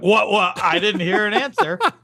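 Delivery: very high, taunting, mocking voice. Acting out the other speaker ignoring a correct answer: mocking imitation of the other speaker. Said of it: "and I'm like".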